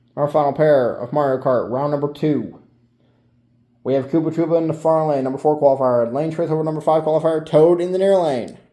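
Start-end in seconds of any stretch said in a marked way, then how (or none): 3.9-8.5 rushed, rattled-off, words tumbling out too quickly. Commentator announces the lanes for the final Mario Kart pair, talking too fast. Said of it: "I'm talking too fast".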